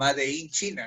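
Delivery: English words pronounced with Spanish accent. Showing how Peruvians castellanize an English label: Spanish-style English pronunciation. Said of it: "traducir el castellano, como siempre lo decimos ... Que no se pronuncia así, pero el peruano lo suele castellanizar todo".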